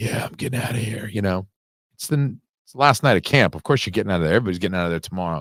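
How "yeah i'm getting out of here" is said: mimicked breathy speech, quieter. Imitating a film character's way of talking: imitating a breathy way of talking. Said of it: "that kind of, like, breath, he's sort of like".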